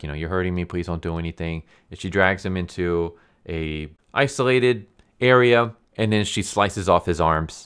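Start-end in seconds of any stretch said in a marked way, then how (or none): 0.1-1.6 desperate, pleading put-on begging voice. Retelling how a caught young man begged: imitating someone begging. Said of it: "he's just begging her".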